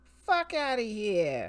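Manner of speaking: New Jersey accent with words punched for emphasis. Speaker says the mantra from a card they pulled, in a New Jersey accent. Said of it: "Say it in a New Jersey accent to add emphasis".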